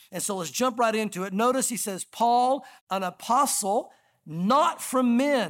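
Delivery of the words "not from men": heavy stress on not from men. Reading a Bible passage aloud to listeners, stress on not from men. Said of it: "and I'm stressing that on purpose".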